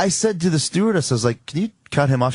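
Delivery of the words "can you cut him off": plain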